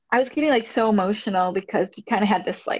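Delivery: normal talking voice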